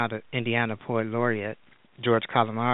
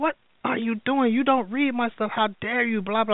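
play-acted very high, shrill, furious angry outburst; 12 semitones higher than usual. Retelling catching someone reading their writing, the speaker acts out an angry outburst. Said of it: "I was going off".

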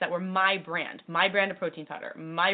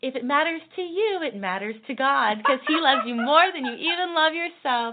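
sugary sweet tone, raised high; 7 semitones higher, 5 dB louder than usual. Retelling what she told the speaker, imitating her sweet voice. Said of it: "her sweet voice is".

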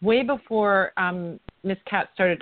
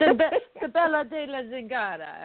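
exaggerated put-on Italian accent; 4 semitones higher than usual. Saying the name of a card from an Italian deck: Mario-style Italian accent. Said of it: "I always feel like I have to say it like I'm Mario from Super Mario Bros".

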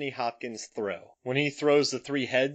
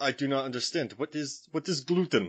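British speaker's fake Romanian accent. In a dinner sketch about wolf tongue, answering the gluten question, romanian accent. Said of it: "a British guy doing a Romanian accent".

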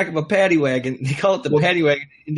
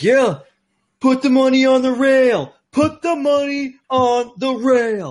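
very slow, high, drawn-out, repeated screaming; 5 semitones higher, 4 dB louder than usual. Retelling a drunken bet at a party, imitating someone screaming. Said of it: "I just kept screaming it".

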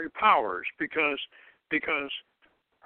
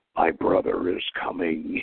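put-on demonic little girl voice, much lower; 11 semitones lower than usual. Retelling a scene, a speaker quotes a seven-year-old girl: demonic little girl voice. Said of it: "this demonic voice she has".

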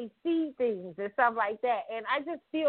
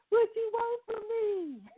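put-on crying delivery, higher pitched; 11 semitones higher than usual. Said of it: "when he was on there crying".

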